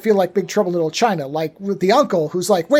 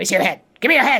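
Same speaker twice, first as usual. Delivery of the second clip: put-on strange witchy creature voice. Imitating the film's witch, whose voice mixes Yoda and Aughra. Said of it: "she always speaks like that".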